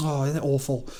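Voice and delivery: play-acted, woeful, plaintive, complaining grumble. Mocking characters who grumble about their oppression: mock grumbling about oppression. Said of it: "grumble about their oppression with a tone designed to evoke a tilt of the head".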